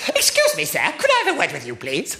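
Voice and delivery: put-on sing-song, swooping eleven-year-old girl voice. Teacher recalling a pupil who came to see him after a lesson, Sat-Nav impression. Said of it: "You'll think I'm exaggerating this impression".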